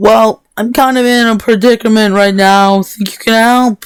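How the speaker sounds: screaming, shouting. Playing a character in a role-play scene, answering a shouted question, screaming. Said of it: "Philip screamed".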